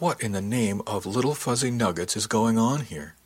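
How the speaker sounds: plain reading voice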